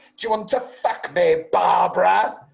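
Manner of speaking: loud, high, raspy voice. Quoting a line from a film, a Cate Blanchett impression like Hannibal Lecter. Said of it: "Why does your impression of her sound like Hannibal Lecter?".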